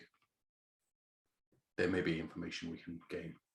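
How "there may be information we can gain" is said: very quiet, soft voice. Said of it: "I very quietly say".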